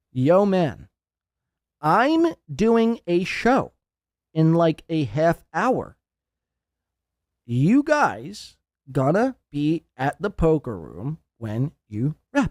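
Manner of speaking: slow, deliberate reading aloud, word by word. Speaker reads aloud a text message he sent, for everyone listening: read slowly. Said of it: "I'll read it slow for everyone to listen to".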